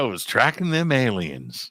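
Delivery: put-on casual, unbothered, offhand tone. Retelling a contractor's remark about his night shift: imitating a nonchalant tone. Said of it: "Very nonchalant".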